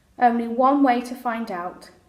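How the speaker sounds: ordinary delivery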